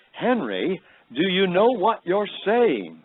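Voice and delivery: put-on thick, heavy British accent, high and swooping. Retelling an elderly lady questioning Henry, in a heavy British accent. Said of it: "she says to me in her heavy British accent".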